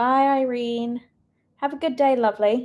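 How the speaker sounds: fake British accent slipping in. Saying goodbye to someone, put-on british accent. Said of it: "the British accent came back to me".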